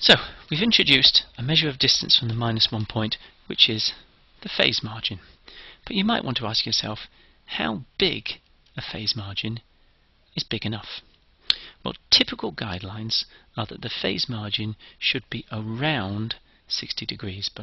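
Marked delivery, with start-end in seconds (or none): 15.5-17.5 around slowed and stressed hard. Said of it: "I do need to emphasize this word around".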